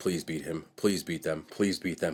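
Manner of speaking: low mutter under the breath. Retelling a dad's words during the Super Bowl: imitating muttering under breath. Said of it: "I can hear my dad under his breath".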